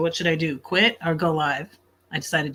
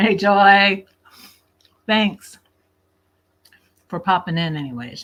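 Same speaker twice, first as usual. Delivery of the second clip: mouth full, much louder; 3 semitones higher, 7 dB louder than usual. Eating on stream, greeting a viewer who popped in, talking with mouth full. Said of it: "I can't talk with my mouth full".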